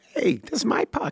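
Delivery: very high, squeaky, creaky hockey-player voice. Acting out a player heard on the broadcast claiming his puck, imitating a hockey player's voice. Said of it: "and his voice is like this".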